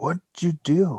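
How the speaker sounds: very quiet, barely audible, hushed half-whisper. Voicing a character who leans over to another character, half-whispering. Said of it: "and whispers".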